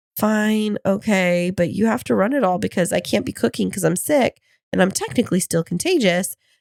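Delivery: ordinary talk, nothing marked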